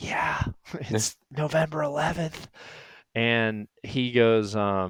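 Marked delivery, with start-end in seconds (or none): 0.0-2.5 soft, hushed, barely voiced whisper. Retelling answering a phone call from a stand: imitating own whisper. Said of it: "whispering on my little flip phone".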